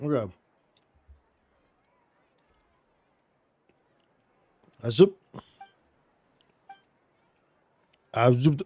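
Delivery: speaking with full mouth. Asked to read aloud while chewing a Hershey's, talking while chewing. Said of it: "But I'm chewing the Hershey's".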